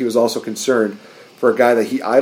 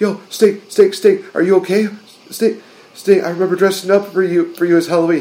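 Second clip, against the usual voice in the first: pitched-up, freaked-out, worried voice; 8 semitones higher than usual. Retelling Sting being put in an ambulance: imitating Seth Rollins freaking out. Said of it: "a really pretty good impression where he was just like".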